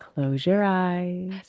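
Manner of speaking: sultry, sexy come-on voice in a phone-line style. Recalling a different voice coming out at the mic, a sexy 1-800-number voice. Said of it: "The sexy 1-800 number voice comes".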